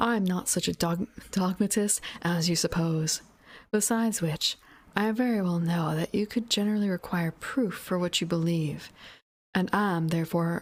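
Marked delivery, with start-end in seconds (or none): none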